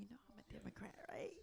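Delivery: soft, unvoiced whisper under the breath. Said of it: "and I whispered".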